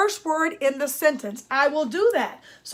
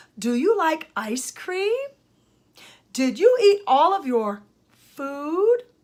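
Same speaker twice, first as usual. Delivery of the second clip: pitch rising at each phrase end. Teaching how questions sound with example questions, rising question intonation. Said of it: "my intonation went up at the end".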